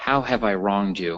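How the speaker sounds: usual speaking voice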